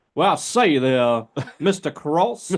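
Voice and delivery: put-on old Southern gentleman accent. Asking the other speaker to be like old South, he demonstrates an old South voice. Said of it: "I need you to be like old South".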